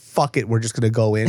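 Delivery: plain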